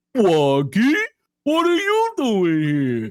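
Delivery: high, loud character voice with big swooping pitch. Speaker announces his impression first so it can't be taken out of context: Big the Cat impression. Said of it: "this is my Big the Cat impression".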